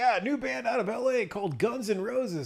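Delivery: very high radio DJ announcer patter. Retelling what a radio dj announced on air: imitating a radio dj. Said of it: "the D J came on the radio. He's like".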